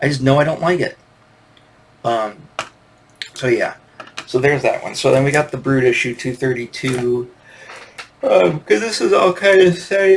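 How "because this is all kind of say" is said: loud, pitched-up speech stretched through a yawn. Recording a video about comic issues, yawning through words. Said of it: "there goes the yawning again".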